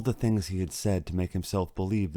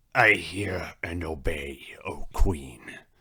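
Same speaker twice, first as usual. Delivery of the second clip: wolfish, growled voice; 3 semitones lower than usual. Reading a story aloud, the narrator voices the wolf answering the Queen: growling wolf. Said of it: "growled the wolf".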